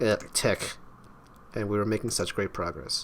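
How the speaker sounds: plain reading voice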